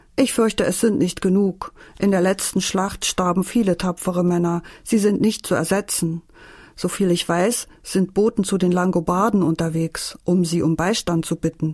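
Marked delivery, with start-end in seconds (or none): none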